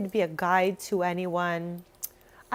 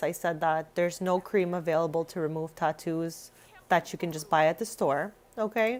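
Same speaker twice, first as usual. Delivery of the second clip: ordinary talk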